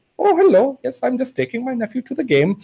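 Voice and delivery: really fake, high-pitched Indian accent. Retelling how the speaker's uncle talked to a border guard: really fake indian accent. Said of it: "he'd always put a really fake one on at the border".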